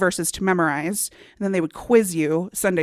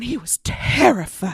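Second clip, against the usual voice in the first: mock-excited breathy southern belle voice. Quoting a remembered line, mock-excited breathy southern belle. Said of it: "like a southern belle, all breathy and like excited".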